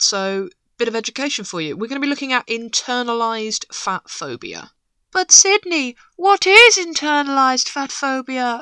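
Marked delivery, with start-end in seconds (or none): 5.1-8.6 high, whimsical, dreamy voice. Voicing an imagined listener's question to the audience, in a put-on whimsical, dreamy voice. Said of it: "I hear you ask in a whimsical, dreamy voice".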